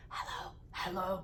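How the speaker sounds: breathy, creepy man's whisper. Retelling a creepy caller who said hello, imitating his creepy voice. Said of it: "His voice, ... he was so creepy".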